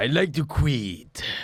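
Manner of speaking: fake, very slow, very drawn-out put-on Chinese accent. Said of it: "I'll be Chinese for this one".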